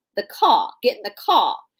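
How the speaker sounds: upper-class Southern accent, r dropped, car as caw. Explaining accents in writing, the speaker demonstrates a high-caliber Southern woman: upper-class Southern accent. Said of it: "if you are a Southern woman of, of high caliber, you're going to say caw".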